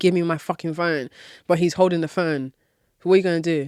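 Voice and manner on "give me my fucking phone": put-on angry crying woman voice, quieter. Retelling how a woman demanded her phone back: imitating an angry crying woman. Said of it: "crying and getting agitated and more and more aggressive and angry".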